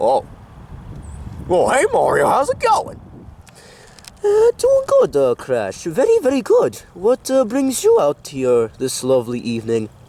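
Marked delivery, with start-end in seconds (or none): 4.2-6.8 swooping, sing-song character voice with wide pitch swings. Answering Crash in a skit, revealing himself: Mario voice. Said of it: "is that Mario's voice?".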